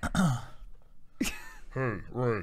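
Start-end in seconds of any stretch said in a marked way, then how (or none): 1.7-2.4 deep, low-pitched voice. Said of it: "and I'm going to be Kylo Ren".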